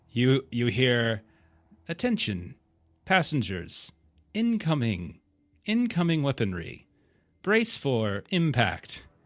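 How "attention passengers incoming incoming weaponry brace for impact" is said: dry, swooping artificial voice, as over speakers. Narrating a scene, the speaker voices a very dry AI over the station speakers. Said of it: "you hear a very dry A I voice come on the speakers".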